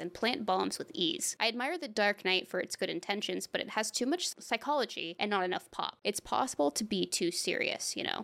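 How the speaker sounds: ordinary talk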